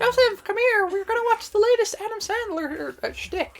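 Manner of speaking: put-on very high, squeaky helium-balloon voice. Imitating a friend inviting Joseph to a movie: helium-balloon voice. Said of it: "Your impression for him sounds like one of the Munchkins".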